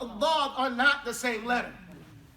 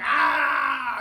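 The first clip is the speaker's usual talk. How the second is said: loud barked drill shout on ah. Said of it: "The closest we have is the military".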